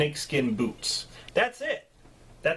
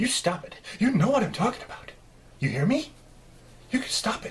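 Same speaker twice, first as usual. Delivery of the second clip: pitched-up yell, reined in and held back; 6 semitones higher than usual. Retelling a movie's cafe scene, speaker imitates Dennis Weaver's hushed yell. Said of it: "He has that voice. It's like he's yelling at you, but he's trying to be quiet".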